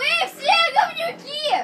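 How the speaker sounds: shrill, very high-pitched shout. Shouting out toward the window after being told to yell: shouting out loud. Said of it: "ори, быстро".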